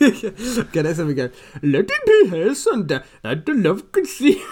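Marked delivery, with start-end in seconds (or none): 1.6-4.4 poor fake Welsh accent, higher, louder. Having a go at the line after being challenged to add a welsh accent, bad welsh accent. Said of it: "at least do it in a Welsh accent".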